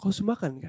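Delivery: very soft, low, gentle voice. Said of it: "Nadanya pelan".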